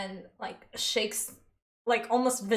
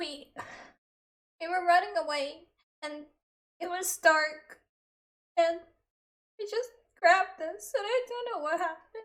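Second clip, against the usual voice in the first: sobbing, tearful, pitched-up crying speech; 9 semitones higher than usual. Speaking as a character in a roleplay scene, crying while talking. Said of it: "I'm actually crying now".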